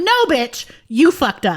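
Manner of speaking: blunt, cutting, scolding tone. Retelling how she shot down a coworker in a team meeting: imitating herself telling a coworker off. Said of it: "I laid her flat in front of".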